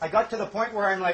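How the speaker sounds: normal talking voice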